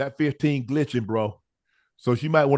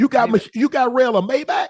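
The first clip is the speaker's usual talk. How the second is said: loud raised voice, much higher and slower; 11 semitones higher, 5 dB louder than usual. Interrupting to question another speaker about a car purchase, loud. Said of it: "Why are you so loud?".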